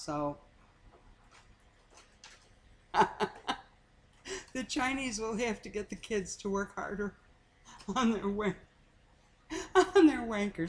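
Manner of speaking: talking while cracking up, laughing through the words. Talking about how different things are now from how they were, laughing while talking. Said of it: "Sorry, I'm laughing".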